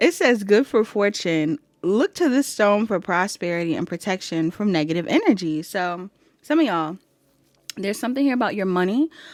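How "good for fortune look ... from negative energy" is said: ordinary delivery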